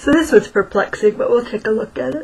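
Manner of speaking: speaking while yawning. Late at night during a card reading, the speaker talks while yawning. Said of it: "sorry, I'm yawning".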